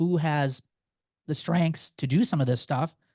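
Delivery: ordinary delivery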